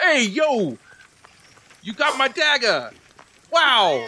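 strange, swooping, high-pitched voice. Voicing a talking dagger greeting its finder: odd dagger voice. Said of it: "Why does it sound like that?".

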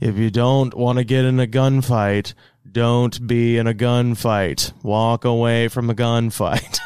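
mock deadpan delivery, like an instructor. Quoting the guy who taught the class, imitating a deadpan instructor. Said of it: "very, very deadpan".

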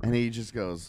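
ordinary talk, nothing marked

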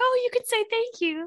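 very high, all-sweet, syrupy sugary voice. Retelling what she said to him, imitating someone being all sweet. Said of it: "she was all sweet and like".

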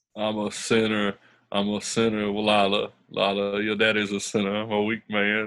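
put-on Southern drawl. Launching into a bit before the awards, doing a Buddy Garrity impression. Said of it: "your Buddy Garrity's more like South Carolina Buddy Garrity".

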